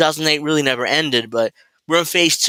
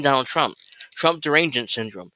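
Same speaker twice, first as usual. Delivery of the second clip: plain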